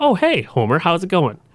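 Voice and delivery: polite, cheerful, high-pitched. Retelling how Marge greets a downcast Homer: imitating Marge, polite and happy. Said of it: "she's as polite and happy as can be".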